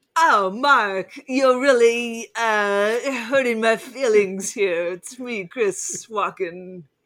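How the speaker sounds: very slow delivery, every word drawn out. Replying to Mark about the movie: Christopher Walken impression. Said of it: "when you're doing an impression".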